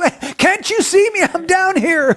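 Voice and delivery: very high, frantic, screaming holler. Acting out a stranded man calling to a helicopter, screaming and hollering. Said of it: "screaming and hollering".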